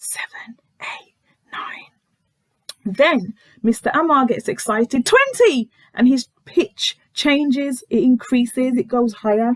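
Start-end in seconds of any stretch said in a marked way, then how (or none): 0.0-1.9 soft, hushed, secretive whisper. Acting out how someone counted numbers in a retold scene: retelling a whisper. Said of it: "So then she whispers".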